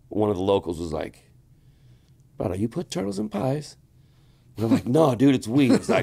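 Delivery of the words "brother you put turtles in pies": put-on soft Hawaiian local accent, pitched up. Retelling a local's question, quoting him in a hawaiian accent. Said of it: "I hope that was a decent Hawaiian accent".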